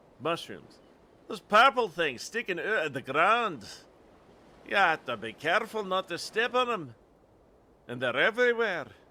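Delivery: attempted Scottish brogue. Playing a character, the speaker talks in an attempted scottish accent. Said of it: "If my Scottish accent is bad".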